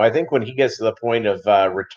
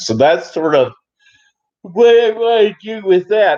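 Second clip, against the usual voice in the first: very high, loud words said through a yawn; 9 semitones higher, 5 dB louder than usual. Speaker woken at two fifteen in the morning, talking while yawning. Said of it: "I'm sorry for yawning".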